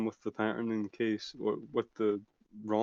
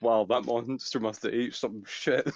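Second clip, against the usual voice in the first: normal talking voice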